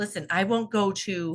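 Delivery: ordinary talk, nothing marked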